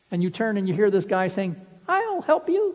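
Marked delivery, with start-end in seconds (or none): 1.8-2.7 tiny, squeaky, very high little voice. A weakling runs into the fight to help you, in a squeaky, tiny little voice. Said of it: "a squeaky, tiny little voice".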